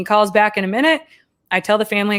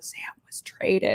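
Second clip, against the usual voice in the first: near-silent mouthed whisper; 10 dB quieter than usual. Retelling mouthing news to a mother-in-law in a store: imitating silently mouthing words. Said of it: "I'm mouthing to her".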